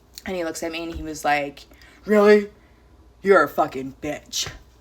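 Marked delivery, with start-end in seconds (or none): 2.0-4.4 put-on drunk man voice. Retelling a man's insult after being asked to leave: imitating a drunk man. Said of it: "Drunk, right?".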